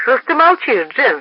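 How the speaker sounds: testy, impatient, irritated, annoyed tone. McMahon addresses his silent wife Jen, irritated. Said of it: "раздраженно обратился к ней Макмагон".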